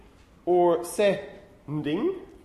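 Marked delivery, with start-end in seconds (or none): 0.9-2.2 sending drawn out very slowly, split at different syllable. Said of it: "where are the syllable boundaries in English".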